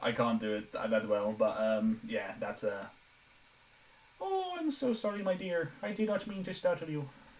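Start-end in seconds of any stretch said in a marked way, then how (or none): 4.2-7.1 high-pitched, pushed-up character voice. Trying the voice again for the audience despite a dry throat, high-pitched voice. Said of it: "so this high pitched voice".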